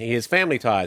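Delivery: ordinary delivery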